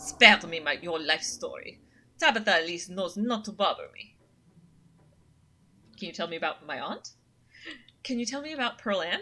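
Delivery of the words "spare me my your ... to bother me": clumsy, badly done put-on French accent. Reading a snobby cat's lines in a game: bad French accent. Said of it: "It's supposed to be French".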